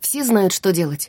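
ordinary delivery

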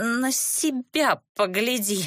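shaky, trembling voice, snapping sharply. Narrator reads a girl's retort to a ghost: trembling, snapping retort. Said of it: "дрожащим голосом огрызнулась Катисса".

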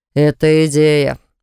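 ordinary delivery

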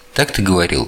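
ordinary delivery, nothing marked

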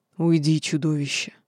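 low, venomous hiss through the teeth. Narrator reads a character's line spoken to the narrator; hissing. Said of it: "прошипел Динар".

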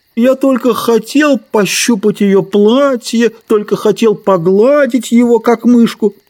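put-on high, childish, teasing little-girl taunting voice. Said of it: "И он передразнил Ленни, как передразнивают друг друга маленькие девочки".

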